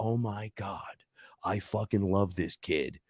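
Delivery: mock weepy, slow tearful blubbering through the words. Retelling how she broke into tears and spoke: imitating someone breaking into tears. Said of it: "she just breaks into tears and goes".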